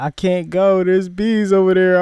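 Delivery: loud, tearful, scared, crying pleading. Retelling being scared of bees on a roof, imitating own past crying plea. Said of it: "I'm over here crying and shit".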